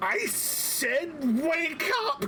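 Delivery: shrieked, very high and very slow scream. A game master voices the voice in the player's head: screaming.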